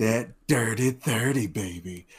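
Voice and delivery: slow, fake seductive, put-on sultry voice. Announcing the episode number to the others as a joke: put-on sultry voice. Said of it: "Speak to you in this sultry voice".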